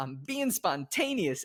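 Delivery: mock, giddy, manic, off-the-rails yelled exclamation. Retelling a film scene where Truman yells out the car window: imitating Truman yelling. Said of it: "he's yelling this out the window".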